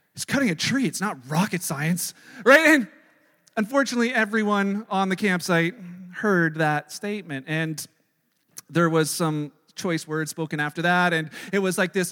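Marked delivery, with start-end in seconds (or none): 0.2-2.1 put-on loud, exasperated, grumbling mutter. Retelling a muttered complaint while walking to the rope holder: imitating a loud grumbling mutter. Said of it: "I mutter under my breath at full volume".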